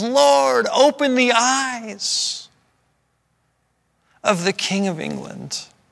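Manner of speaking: put-on ringing cry, loud, clear, slow, drawn-out vowels. Retelling a man's last words as he is about to be killed, loud clear voice. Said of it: "With a loud voice, with a clear voice".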